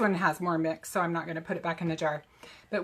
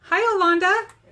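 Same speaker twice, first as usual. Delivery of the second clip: raised pitch, higher and louder; 11 semitones higher, 8 dB louder than usual. Greeting viewers by name as they join: higher-pitched greeting. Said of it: "my voice gets higher when I say hi".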